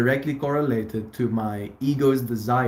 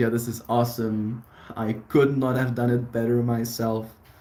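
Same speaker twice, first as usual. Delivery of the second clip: ordinary talk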